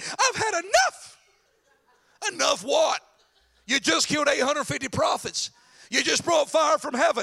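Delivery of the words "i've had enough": very high, whiny, whining voice. Retelling Elijah sitting under the broom bush: imitating Elijah's whiny voice. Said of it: "I like how he says that".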